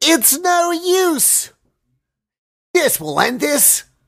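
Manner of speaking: very high, drawn-out, slow lilting inflection. Showing another speaker how to say a game line: higher inflection. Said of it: "your voice has to be a higher inflection".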